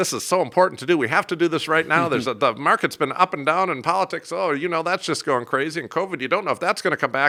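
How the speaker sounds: frantic, high, rushed, panicky rattle. Speaker shows how a panicking plan-writer would sound, mock panic. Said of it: "you are actually communicating that you're panicking too".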